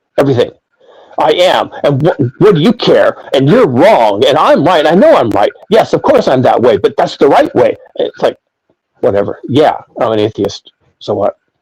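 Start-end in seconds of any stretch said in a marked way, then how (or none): 1.2-7.8 acted, worked-up, heated, emotional argumentative tone. Imitating people on a forum who argue: imitating an emotional argument. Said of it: "everything becomes an emotional argument".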